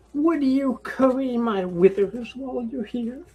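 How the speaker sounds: high, whimsical, playful, wheedling coaxing tone. A game character breezily asks a favour of a visitor, coaxing in a playful tone. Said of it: "Well, you're back again so soon. Are you feeling wiser, little halfling? Well, of course. I whisper from the underbrush, and I will emerge and stand up and brush off my pants that are now covered in s".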